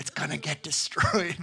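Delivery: loud, theatrical stage whisper. Retelling what was said to a kid during Frozen two: retelling a whisper.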